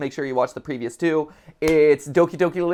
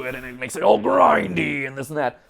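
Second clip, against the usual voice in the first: gravelly, grinding rough voice. Explaining character voices to him, demonstrating pitching into the throat: gravelly voice. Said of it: "add some you know some gravel".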